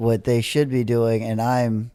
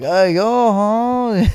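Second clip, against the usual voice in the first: put-on very high, loud, squeaky child voice with Mexican accent; 10 semitones higher, 5 dB louder than usual. Retelling what a dream character said: Boots with a four-year-old's Mexican accent. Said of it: "like a four-year-old's Mexican accent".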